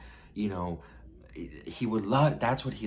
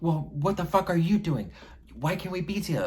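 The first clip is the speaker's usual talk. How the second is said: play-acted, very high, shrill, unhinged screaming; 9 semitones higher, 3 dB louder than usual. Speaker retelling a fight with him after making a scene, re-enacting own screaming. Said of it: "I started screaming".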